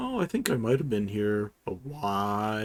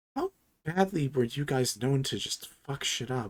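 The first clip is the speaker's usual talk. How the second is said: hushed whisper, pitched higher; 3 semitones higher than usual. Voicing Clem, who leans in to ask the party: whispering.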